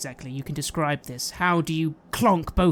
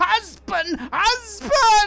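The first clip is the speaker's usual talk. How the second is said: very high, loud, gurgling creature shriek; 6 dB louder than usual. A stunned being twitches back and forth where it stands: loud gurgling scream. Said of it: "screaming very loudly in this gurgling voice".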